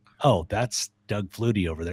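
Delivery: ordinary delivery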